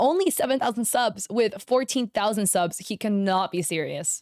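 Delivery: ordinary talk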